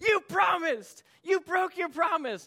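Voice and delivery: very high, shrill, loud furious screaming. Recounting catching up to him at the edge of the bank, retelling yelling at him. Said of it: "I'm yelling at him, I'm screaming at him".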